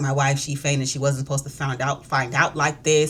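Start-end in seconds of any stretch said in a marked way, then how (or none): none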